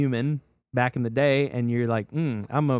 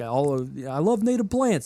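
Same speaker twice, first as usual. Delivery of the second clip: exaggerated put-on Brooklyn accent, much slower. Quoting a guy a former podcast co-host introduced: imitating a big brooklyn accent. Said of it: "he's got this big Brooklyn accent".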